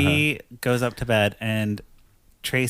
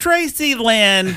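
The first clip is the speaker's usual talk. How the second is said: put-on scolding voice, higher and louder; 11 semitones higher, 7 dB louder than usual. Retelling a scene where Mima catches the couple: imitating Mima scolding like a mom. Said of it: "the mom, like, doing the thing".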